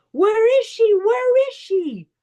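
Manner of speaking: acted-out yell, voice way up. Telling a river story, the speaker repeats their best friend's yell, retelling a friend's yell. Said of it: "My best friend yells".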